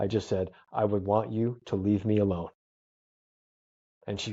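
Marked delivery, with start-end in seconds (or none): 0.7-2.5 put-on calm but menacing tone. Retelling answering a lady who offered an ambulance: imitating a calm but menacing tone. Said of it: "I calmly, but with the tone of".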